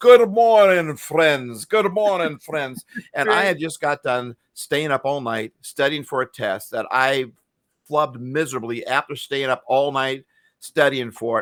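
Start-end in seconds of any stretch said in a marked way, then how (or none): 0.0-2.8 put-on loud, happy, cheery English accent. Recalling a cheerful professor's greeting: imitating Doctor Owen's English accent. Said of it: "he had this English accent".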